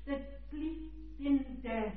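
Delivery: unhurried, slow, relaxed delivery.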